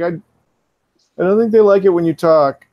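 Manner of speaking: high, loud, panicked, blurted-out voice. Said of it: "you hear [name]'s voice again".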